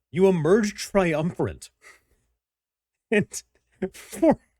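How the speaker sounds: talking through laughter. Reading out an ability description, laughing while talking. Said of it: "I'm still just laughing".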